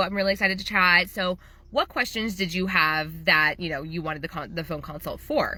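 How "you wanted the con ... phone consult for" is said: ordinary talk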